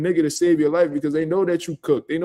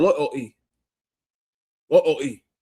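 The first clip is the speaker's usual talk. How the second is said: loyalty said with British pronunciation; 3 semitones lower than usual. Retelling how a boxer said loyalty in an interview: Dalton Smith saying loyalty. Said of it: "how the way British people say".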